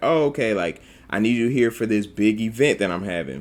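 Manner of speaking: ordinary talk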